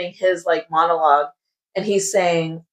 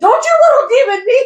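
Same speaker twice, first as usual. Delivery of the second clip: play-acted, very high, loud, furious delivery; 6 dB louder than usual. Retelling a character's retort from a book: imitating someone angry. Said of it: "she's pissed off".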